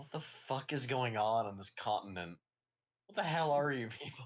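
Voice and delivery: loud, baffled, disbelieving, bewildered exclamation. Voicing a character walking through a strange continent: confused. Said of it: "just looks confused the entire way".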